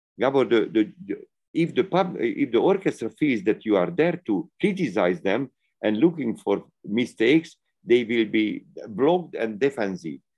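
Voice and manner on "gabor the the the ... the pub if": usual speaking voice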